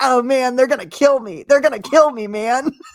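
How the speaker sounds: high, loud, whiny, pleading moan. Mocking a movie villain who fears being killed: imitating a whiny guy. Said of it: "this whiny guy with a pedo stash going like".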